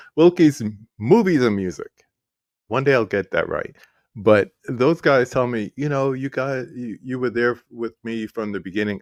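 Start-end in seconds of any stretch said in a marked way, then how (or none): 0.2-1.9 slow, loud, careful word-by-word enunciation. Speaker repeats a supporter's shop name to get it right, saying it slower. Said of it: "I gotta say it slower".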